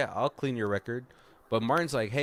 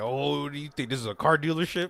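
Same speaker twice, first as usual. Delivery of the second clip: mock angry, mad tone, pitched higher; 4 semitones higher than usual. Retelling a movie scene where the man is so mad: imitating someone mad. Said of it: "he's so mad".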